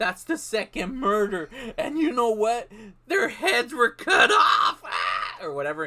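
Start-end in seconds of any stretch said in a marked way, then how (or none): 0.0-4.8 oddly delivered, strange-sounding, pitched-up line reading. Retelling a movie scene, imitating a character's weird line reading. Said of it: "He says it all weird like that".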